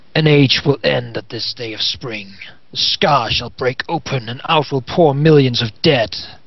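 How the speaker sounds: dark, evil, shadowy wraith voice. A game master voices a shadowy wraith addressing the players; dark wraith's voice. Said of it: "an evil form, a dark form, a wraith of a kind, / an evil form, a dark form, a wraith of a kind, and it looks at you with dark, shadowy eyes. / No mortals shall live to witness the rise of the [name]".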